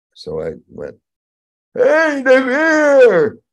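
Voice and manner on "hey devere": shrill, very loud, high calling shout, word stretched. Recalling finding log cabins with no people, the speaker calls out: retelling a loud shout. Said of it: "And I did it loud".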